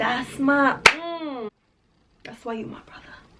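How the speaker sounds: whispered, unvoiced, hushed aside.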